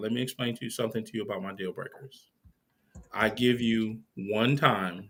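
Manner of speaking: calm, even, low, soft, level tone.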